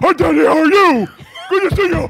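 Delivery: Iranian accent in a put-on pet dog voice. Showing how his dog talks to him, the speaker does Cyrus the dog's voice. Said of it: "My dog sounds like this".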